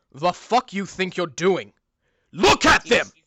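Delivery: angry scolding character voice. Voicing a character who knocked a player down, angrily scolding. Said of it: "looks at you and he says".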